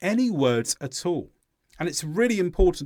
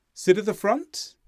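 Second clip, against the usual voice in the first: unsure rising pitch on the word "front"; 5 semitones higher than usual. Showing how up intonation signals a lack of certainty: rising pitch on front. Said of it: "By going up, I'm indicating a lack of certainty".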